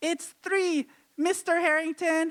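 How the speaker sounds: high-pitched, keen, eager schoolboy voice. Retelling answering a teacher in class as a kid: imitating own high-pitched voice. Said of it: "with my high-pitched voice".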